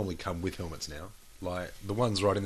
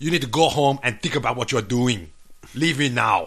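stern, loud, intimidating put-on Austrian accent; 5 semitones higher, 11 dB louder than usual. Quoting a man telling him to go home, in a put-on Austrian accent. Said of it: "I can't do the voice. ... that was a better impression".

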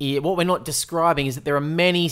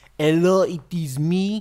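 exaggerated put-on French accent; 2 semitones higher than usual. Imitating a Frenchman played in a movie: John Malkovich's hammy French accent. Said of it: "He makes a meal out of that accent".

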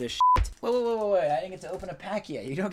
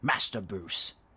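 put-on very deep, very low, elderly gentleman's voice; 9 semitones lower, 3 dB quieter than usual. After an impression is called the worst, trying again: Michael Caine impression. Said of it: "I can do a better one".

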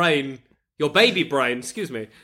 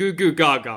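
nonsense gurgling infant babble-talk; 3 semitones lower than usual. Acting out a future scene as a baby: put-on baby talk. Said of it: "Why are you still talking like a baby".

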